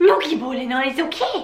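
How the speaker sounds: goofy, high, silly, funny put-on voice. Explaining Swiss slang, saying a phrase sarcastically: funny voice. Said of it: "in a funny voice".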